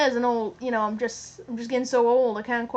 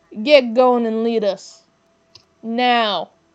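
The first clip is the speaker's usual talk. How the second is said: very loud, deep, slow booming growl; 9 dB louder than usual. Voicing a character whose competence was questioned: deepened growling voice. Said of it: "his voice kind of deepens, and he just kind of growls out".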